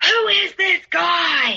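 high, drawn-out screaming. Retelling a man screaming at you over a picture, imitating someone screaming. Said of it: "he starts screaming at me".

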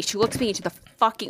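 ordinary delivery

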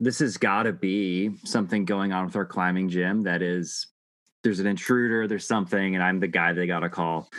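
ordinary delivery

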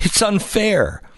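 put-on high, slow, pleading child voice.

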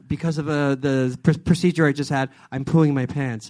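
quiet, confiding stage whisper, under the breath. Retelling what someone half-whispered during a script reading: imitating a half-whisper. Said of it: "Scott whispered to me".

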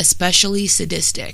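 ordinary talk, nothing marked

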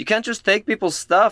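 shouting. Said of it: "I'm gonna yell".

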